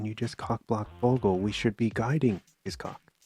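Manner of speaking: imitated whispering. Retelling what the cops in the movie say: imitating whispering cops. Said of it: "But they're whispering".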